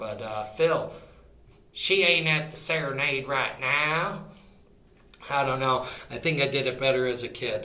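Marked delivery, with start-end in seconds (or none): 0.0-4.2 put-on Texas cowboy accent, Western style. Yelling to phil as if he were a cowboy, in a texas cowboy accent. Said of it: "try to do a Texas or Western accent".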